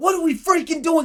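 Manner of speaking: acted-out high, fed-up, angry yelling. Recalling getting mad at the people they'd gathered: retelling own past yelling. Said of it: "I just started yelling at folks".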